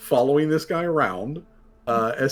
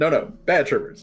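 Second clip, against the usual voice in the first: mimicked, echoing voice like a parrot repeating. Voicing a creature that mimics a companion scolding it: Seamus's voice. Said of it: "a mimic of, um, Seamus's voice".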